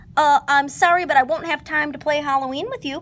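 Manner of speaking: sudden blurt, high and loud. A narrator reading a story voices Piglet's line, blurted out. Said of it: "Piglet blurted out".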